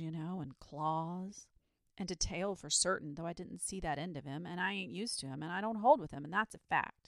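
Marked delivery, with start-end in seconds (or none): none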